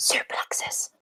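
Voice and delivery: very soft whisper. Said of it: "What are we whispering about?".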